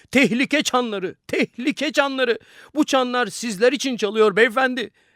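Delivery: very high, agitated, excited yelling. A man who just came in answers the businessman's question, shouting. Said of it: "Adam bağırıyordu".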